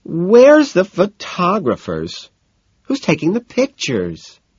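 high, swooping, whiny, complaining voice. Narrator reading Daisy's line as lightning flashes: whining.

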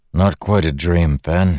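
ordinary delivery

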